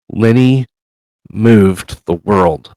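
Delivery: faint, frail, very weak, barely-there voice. A game master voices a woman character speaking to the players, very weak voice. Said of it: "she says in a very weak voice".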